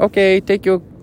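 put-on failed Japanese accent slipping into Mexican. Retelling what a woman said to them: bad japanese accent. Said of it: "trying to do like a Japanese accent, but it's coming out as Mexican".

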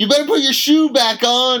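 shrill, very high, loud screaming. Retelling a lady at work scolding her kid over a shoe: imitating a lady screaming. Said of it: "And she was screaming".

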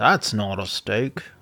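terrible put-on Australian accent. Podcast hosts joking about Australia, one trying a bad Australian accent. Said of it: "that was my Australian voice".

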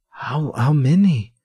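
high voice breaking and cracking on the words. A narrator reads Mirella's line in a story, her voice cracking. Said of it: "her voice cracking".

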